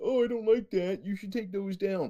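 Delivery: mock-prim nosy busybody voice. Retelling how a stranger walked in and complained, mocking a busybody.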